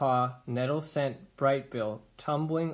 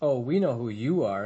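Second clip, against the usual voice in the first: heavy, dripping sarcasm; 4 dB louder than usual. The sister bear answers Roz, who has just introduced herself, dripping with sarcasm. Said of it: "Her voice dripped with sarcasm".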